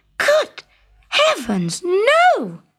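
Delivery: high, swooping shout with a long stretched no. The princess answers the frog on the pillow, shouting. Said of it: "shouted the princess".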